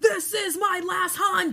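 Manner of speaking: very loud, shrill, slow drawn-out yell. Picturing an actor as the hunter villain: Gerard Butler impression. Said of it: "Gerard Butler going".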